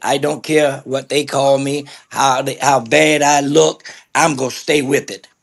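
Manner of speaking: usual speaking voice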